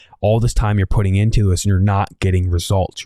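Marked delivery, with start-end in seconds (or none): none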